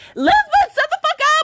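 mock sudden, high, shrill screamed outburst. Retelling how a friend in the front seat cut in: imitating someone screaming.

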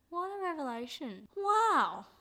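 high-pitched amazement that sounds sarcastic. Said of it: "I know I might sound sarcastic".

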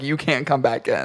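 ordinary talk

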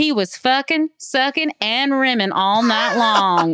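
put-on strong Southern accent. Quoting a show's character line: imitating Parker Posey's strong Southern accent. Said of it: "says stuff with a very strong Southern accent".

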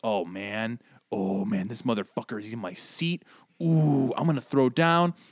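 exaggerated mock anger, tough-guy movie style. Mimicking how movie characters play it up, mock-angry. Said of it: "they play it up".

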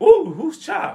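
put-on high, blunt, rude old-grandpa voice. Imitating the grandfather commenting as guests walk in front of him: imitating the grandfather's voice. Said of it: "he talk like that".

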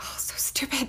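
soft whisper under the breath. Retelling what a man whispered to himself after walking away: whispering to himself. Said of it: "Matt just whispers to himself".

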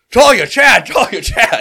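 booming amplified shout. Calling out for missing companions down a stone hallway: booming magically amplified shout. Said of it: "I use thaumaturgy and boom my voice".

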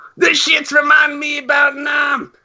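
high, shouting, hollered rant. Asked to imitate what she does, trying out imitating what she does. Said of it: "imitate what she does".

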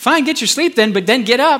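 heavy put-on sarcasm. Acting out Jesus's final words to his sleeping friends: imitating a sarcastic tone. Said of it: "That's sarcasm".

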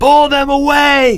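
very high, shrill scream. Leo, pushing against Greg's army of third graders, screamed. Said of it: "Screamed Leo".

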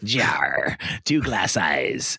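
sea captain voice talking like a pirate. Describing a show's sea captain who talks like a pirate: sea captain's pirate voice. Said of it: "the sea captain talks like a pirate".

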